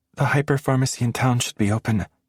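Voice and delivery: small, meek voice. She speaks to the narrator's back as the narrator heads for the door; small voice. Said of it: "she says in a small voice".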